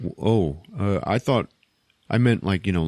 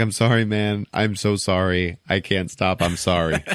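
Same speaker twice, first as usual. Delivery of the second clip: put-on laughing through the words. Retelling a movie scene where Rocket keeps laughing: imitating Rocket laughing while apologizing. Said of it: "Rocket starts fucking laughing again".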